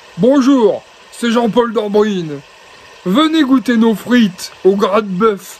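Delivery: put-on thick, broad northern French Ch'ti accent. Act out the announcements he made in the stadium, in Jean-Paul Dambrine's Ch'ti accent. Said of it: "Et avec son accent du Nord".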